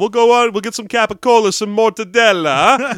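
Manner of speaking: loud, high New York Italian tough-guy voice.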